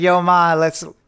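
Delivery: casual, laid-back "yo" guy voice. Imitating how Maddie's fiance talks: Grant Trout impression. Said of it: "Grant Trout. He's like".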